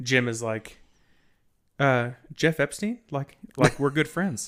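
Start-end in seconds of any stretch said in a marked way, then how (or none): 1.8-4.5 bone-dry, dead straight, no reaction. Retelling a podcast moment, imitating the writer Jim Downey: deadpan Jim Downey impression. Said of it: "And he's very deadpan".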